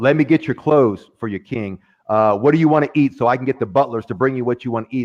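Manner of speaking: ordinary delivery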